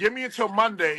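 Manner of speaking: ordinary talk, nothing marked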